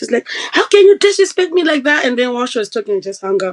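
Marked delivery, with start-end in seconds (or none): 0.5-2.0 mock shouting outburst, shrill and very high-pitched. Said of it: "she shouted so much".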